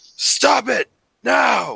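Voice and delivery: slow, high, booming, authoritative shout.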